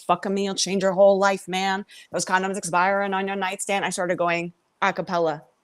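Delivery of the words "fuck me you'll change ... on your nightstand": ordinary talk, nothing marked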